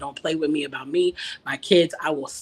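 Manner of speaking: mock berserk, furious rage. Retelling threatening someone in a car: imitating own past berserk rage. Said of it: "I literally went berserk".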